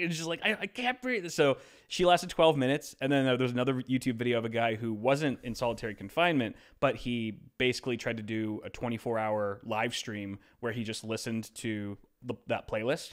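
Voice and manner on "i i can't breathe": panicked gasping, high pitched. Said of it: "basically had a panic attack".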